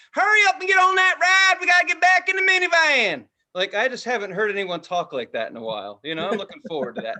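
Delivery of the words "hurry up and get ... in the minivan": put-on southern accent, very high-pitched and very loud holler. Imagining serious Harry Potter ride fans, in a southern accent. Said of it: "people with southern accents saying".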